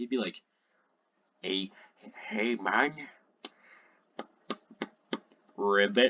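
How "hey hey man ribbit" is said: low, derpy, goofy cartoon frog voice. Speaker imagines how a newly added frog would talk; frog voice. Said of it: "what kind of voice would he have?".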